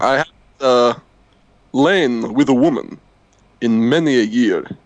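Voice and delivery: put-on vampire voice. Confessing a long dry spell to the other speaker in a skit: Dracula voice. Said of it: "It's been a while for old Dracula".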